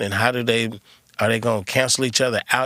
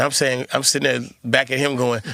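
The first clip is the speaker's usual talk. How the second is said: ordinary talk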